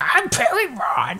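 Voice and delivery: very high, goofy, silly cartoon character voice. Discussing a Digimon episode, imitating Parrotmon announcing himself, Parrotmon voice. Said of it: "He's got like that really silly voice".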